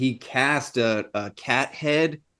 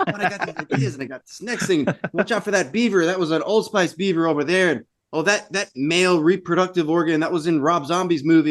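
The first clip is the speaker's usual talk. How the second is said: play-acted high, giddy, bubbling enthusiasm; 6 semitones higher than usual. Imitating an effects artist showing off his work: imitating him being giddy. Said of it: "how giddy he gets".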